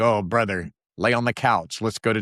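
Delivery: sarcastic, mocking delivery. Speaker retells answering a man asking what it says about him, retelling own sarcastic remark. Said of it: "I got sarcastic and was like".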